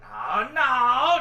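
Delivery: loud, high-pitched, furious, raging outburst.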